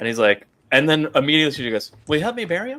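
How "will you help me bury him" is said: put-on high, naive, innocent childlike voice. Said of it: "that childlike innocence to her".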